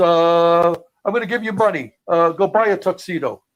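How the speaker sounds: loud voice with a long drawn-out uh. Retelling what the road agent asked him backstage: Chief Jay Strongbow impression. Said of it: "I can't talk about Chief without imitating him".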